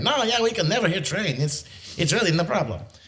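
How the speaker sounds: put-on French Canadian accent drifting Slavic. Recounting a man's reply about never hearing the train: imitating a french canadian accent. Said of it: "And he's French Canadian, he had an accent".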